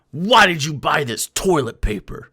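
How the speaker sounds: play-acted angry, demanding outburst. Retelling how a man got mad at a woman, mock-angry. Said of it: "he got mad and was like".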